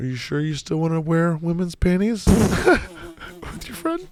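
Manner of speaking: high, mocking, taunting voice.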